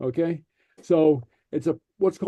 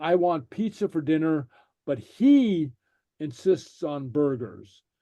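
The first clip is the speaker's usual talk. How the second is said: heavy stress on the word "he". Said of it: "we emphasize something by tone of voice".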